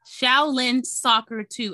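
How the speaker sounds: slow, careful, deliberate delivery. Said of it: "I'm getting tongue-tied on that".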